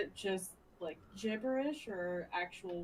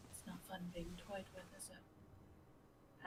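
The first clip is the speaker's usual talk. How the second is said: barely audible, very quiet, hushed whisper; 14 dB quieter than usual. Voicing a character taunting a muttering figure: very quiet whisper. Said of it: "she will very quietly whisper to him".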